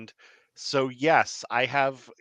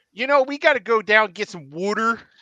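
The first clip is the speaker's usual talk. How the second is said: put-on, loud, high Philadelphia accent; 8 semitones higher, 6 dB louder than usual. Demonstrating an accent for a listener unfamiliar with it: philadelphia accent. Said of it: "that Philadelphia accent's like one of the weirdest".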